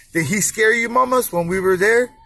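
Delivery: ordinary delivery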